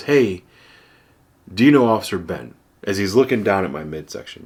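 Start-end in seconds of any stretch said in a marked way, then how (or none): none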